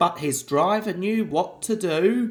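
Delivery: plain reading voice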